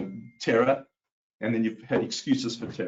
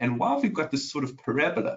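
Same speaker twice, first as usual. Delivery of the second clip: normal talking voice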